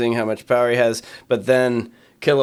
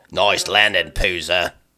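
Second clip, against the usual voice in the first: put-on Australian voice, lower and slower; 5 semitones lower than usual. Discussing a drill-instructor character who calls everyone Poozer, Kilowog voice, Australian accent. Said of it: "This is what I imagine his voice".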